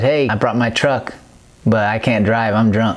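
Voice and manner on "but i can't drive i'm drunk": ordinary talk, nothing marked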